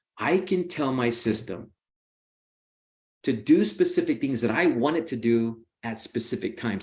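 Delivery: slowed-down, careful, deliberate delivery. Explaining his home system, repeating it more slowly: speaking slower. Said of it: "say that a little bit slower".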